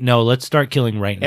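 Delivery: ordinary talk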